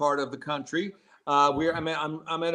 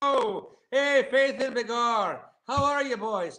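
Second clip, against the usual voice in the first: fake stage Irish brogue, high-pitched and slow; 7 semitones higher than usual. Greeting the hosts while staying in Ireland: put-on Irish accent. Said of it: "I can't get rid of the accent now".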